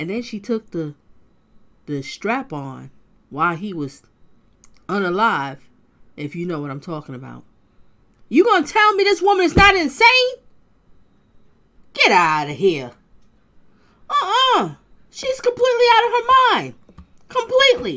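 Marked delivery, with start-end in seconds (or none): 8.3-18.0 very high, shrill, very loud screaming. Telling a story about a woman and her partner, screaming. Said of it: "sorry for screaming".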